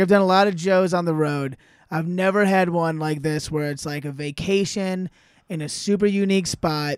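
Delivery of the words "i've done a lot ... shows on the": plain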